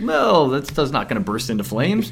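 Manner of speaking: ordinary delivery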